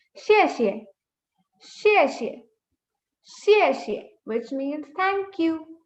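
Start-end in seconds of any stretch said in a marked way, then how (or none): 0.1-4.0 xie repeated, pitch drops, falling fourth tone. A teacher demonstrating the Chinese word for thank you: falling fourth tone. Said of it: "Falling tone".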